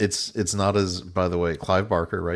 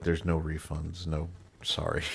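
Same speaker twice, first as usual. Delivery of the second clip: put-on nonchalant, indifferent voice, quieter; 7 dB quieter than usual. Retelling a movie scene where a man calls a helpline: imitating a nonchalant tech support guy. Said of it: "nonchalant, I don't give a shit tech support guy".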